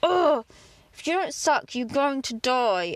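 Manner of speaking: mock-angry, seething speech through gritted teeth. Recalling tube-feeding an animal that wouldn't suck, retelling angry words through gritted teeth. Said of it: "through gritted teeth, so angry at this animal".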